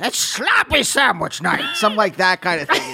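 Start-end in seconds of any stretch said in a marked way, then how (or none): 0.0-1.8 slow, drawn-out, creaky put-on voice. Giving an example line in Adam Sandler's voice, Adam Sandler impression. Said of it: "In Adam Sandler's voice".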